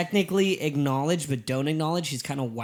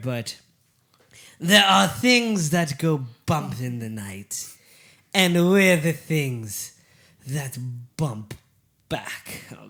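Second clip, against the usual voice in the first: clumsy, failed put-on British accent. A podcast host repeats a quote he used last week, in a bad British accent. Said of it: "Matt cannot do a British accent".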